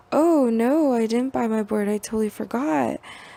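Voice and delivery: ordinary talk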